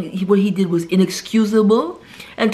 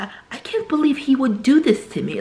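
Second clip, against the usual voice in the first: put-on British accent, pitched higher; 5 semitones higher than usual. Retelling a TV episode, quoting the young daughter about her new husband, imitating a British accent. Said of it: "her British accent".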